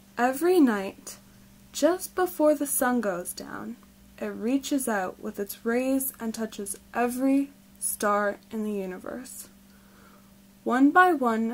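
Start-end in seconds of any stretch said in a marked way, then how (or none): none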